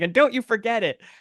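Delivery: mock, very high, mad, angry delivery. Recalling an episode, the speaker acts out a character's line said angrily: imitating an angry line. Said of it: "it really angrily. He's like mad".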